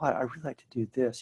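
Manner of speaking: shy, sheepish, quiet little voice. Acting out someone's answer when asked what they'd really like to do, mimicking a quiet sheepish voice. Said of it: "it's like this quiet voice".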